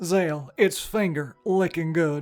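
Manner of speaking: slow, drawn-out, high-pitched spokesman voice. Joking with a co-player, doing the game character as the KFC guy: Jural voice as young KFC guy. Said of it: "sounded like a younger K F C guy".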